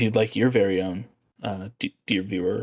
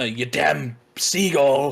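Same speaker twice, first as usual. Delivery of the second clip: put-on pirate voice, higher and louder; 5 semitones higher, 4 dB louder than usual. Playing a lighthouse keeper telling the viewer to get down: pirate voice like Willem Dafoe. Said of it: "talk like a pirate, much like Willem Dafoe does".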